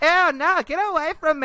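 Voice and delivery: very high, shrill, drawn-out shrieking yell at full volume. Retelling a high school girl pushing her boyfriend away: imitating a girl yelling. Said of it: "yelling at the top of her lungs".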